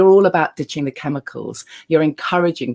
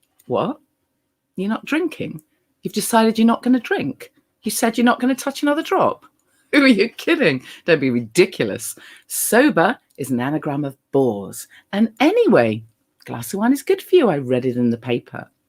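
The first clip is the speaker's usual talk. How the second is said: put-on bright, cheery, chirpy, happy voice, pitched up; 7 semitones higher than usual. Retelling what the inner voice would say, in a mock-chirpy voice. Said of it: "much chirpier, much happier".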